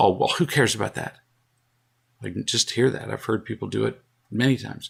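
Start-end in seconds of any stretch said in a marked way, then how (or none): 0.0-1.2 mock-snotty, imitated snide tone. Recounting how a man interrupted them, mimicking a snotty tone. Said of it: "said to me with a snotty tone".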